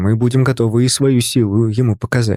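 plain reading voice

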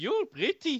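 put-on Indian accent, pitched very high. Asked to add an Indian accent, the speaker repeats the line in an Indian accent. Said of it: "mais rajoute un accent indien dedans".

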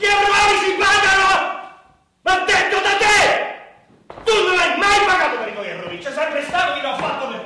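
very loud, very high, shrill, full-throated yelling. Arguing over costs and mistakes, one person yells at the other; yelling. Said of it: "Ma perché urli così?".

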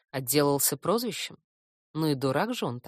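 ordinary delivery

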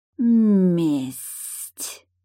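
hissing like a snake. A narrator reads a stone creature answering a question with a snake-like hiss. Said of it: "по-змеиному прошипело каменное создание".

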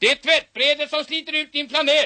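play-acted, very high-pitched, full shout. Man at a bank telling what he said to his old mother, reenacting a shout. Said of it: "Varför skriker ni så?".

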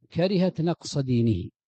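ordinary talk, nothing marked

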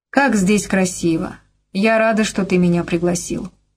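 ordinary delivery, nothing marked

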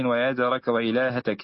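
ordinary talk, nothing marked

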